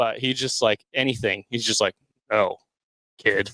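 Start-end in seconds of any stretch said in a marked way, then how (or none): 2.3-3.5 put-on lower-pitched crotchety old man voice. Doing the Harrison Ford impression just refused: Harrison Ford impression. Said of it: "Turns out I can do that".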